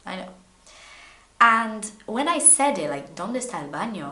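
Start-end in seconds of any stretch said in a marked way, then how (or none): 3.1-4.1 silly, clumsy, self-mocking beginner Spanish accent. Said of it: "I sound silly, don't I?".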